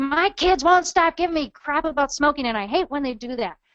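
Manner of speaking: fed-up, resentful, angry complaining tone. Speaker illustrates the anger a mom might voice, angry, resentful. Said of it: "or the anger, kind of like".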